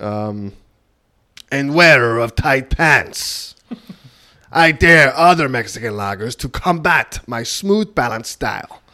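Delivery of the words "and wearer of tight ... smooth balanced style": slow, unconvincing put-on Mexican accent. Reading a beer can label aloud after being asked: attempted Mexican accent. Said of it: "Do it with an accent, please".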